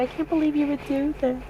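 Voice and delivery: mock upset, soft, high voice near tears. Retelling a family scene, quoting the mother: imitating a crying mom. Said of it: "And the mom's crying".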